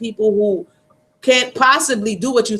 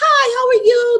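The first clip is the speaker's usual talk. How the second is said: very high, drawn-out, put-on customer-service cheer. Retelling a job in customer service: imitating fake cheerful greeting. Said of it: "I just didn't like the fake".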